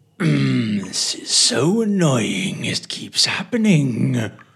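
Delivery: grumbling voice. Voicing an unseen speaker heard within the dripping: grumbly voice. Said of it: "a grumbly voice saying".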